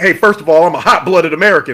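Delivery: light American twang on the vowels. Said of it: "a little bit of a twang to it too".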